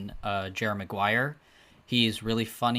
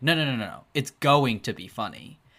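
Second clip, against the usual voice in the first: firm, adamant, insistent, unyielding delivery. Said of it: "And then Tom Cruise was like".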